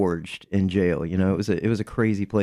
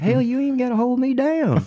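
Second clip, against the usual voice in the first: put-on very high-pitched country old man's voice and accent. Retelling what an old man answered back in the pod, old man's country accent. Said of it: "in that country accent".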